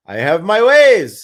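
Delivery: put-on Russian woman's voice. Retelling a bin store owner's reply to a question: imitating a Russian lady. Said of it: "this Russian lady".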